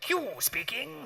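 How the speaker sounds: put-on old-timey announcer voice. Retelling a phone call to a flight instructor, in Q's 1920s-commercial voice. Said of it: "this voice comes down the phone like".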